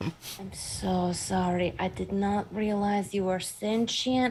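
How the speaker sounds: whispering. Apologizing to a tree with hands on its bark: whispering into tree bark. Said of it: "I'm kinda whispering this into the bark".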